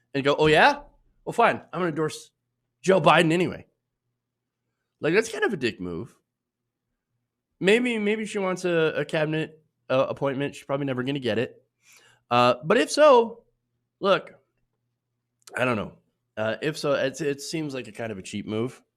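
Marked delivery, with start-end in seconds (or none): 0.3-3.6 high, loud, salty tone. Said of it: "get all salty about it".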